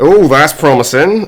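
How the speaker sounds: put-on slightly weird West Country accent. Reacting to a promising turn in a game: slightly weird West Country accent. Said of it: "he says in a slightly weird West Country accent".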